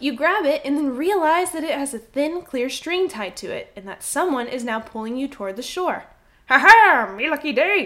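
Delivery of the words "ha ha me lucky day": booming, very loud, slow, drawn-out character voice. Voicing a fisherman who reels in a floating player: fisherman voice. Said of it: "I'm gonna redo that voice".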